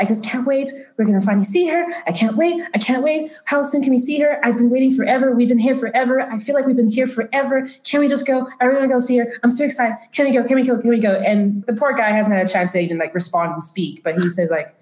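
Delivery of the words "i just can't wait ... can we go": put-on excited little girl voice, rambling, much higher. A storyteller acts out an overheard little girl talking to a man; imitating excited little girl. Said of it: "she's like excitedly rambling".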